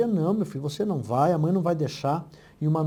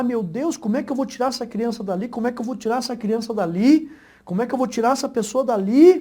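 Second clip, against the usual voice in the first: acted high, pleading woman's shout; 6 semitones higher, 4 dB louder than usual. Telling a story of a woman facing a child in danger over a fire, retelling a woman shouting. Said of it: "E ela começou a gritar".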